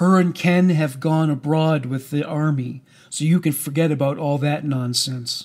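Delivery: ordinary delivery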